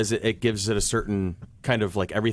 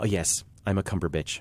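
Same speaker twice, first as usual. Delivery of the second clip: pleased, self-satisfied, proud tone; 2 semitones lower, 3 dB quieter than usual. Retelling a mother's remark at family dinner: imitating mother speaking proudly. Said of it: "my mother very proudly goes".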